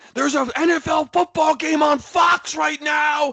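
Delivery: mock very high, loud, drawn-out yell. Retelling yelling from a seat at a bar as a game started: imitating his own yell. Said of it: "I'm yelling from my seat".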